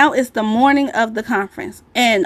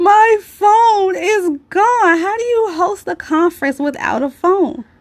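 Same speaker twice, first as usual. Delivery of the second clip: high, drawn-out mock sobbing through every word; 8 semitones higher than usual. Retelling a call to a best friend: retelling crying hard on the phone. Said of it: "I'm crying so hard".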